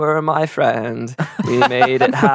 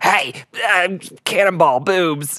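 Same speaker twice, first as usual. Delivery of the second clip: woozy, slow, drugged-out, drawn-out delivery; 3 semitones higher than usual. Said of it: "And this is after drugs".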